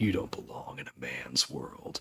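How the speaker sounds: very soft, hushed near-whisper, barely voiced. Retelling a cameo scene, leaning in to an agent: imitating Rob Lowe speaking softly. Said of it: "softly tells him".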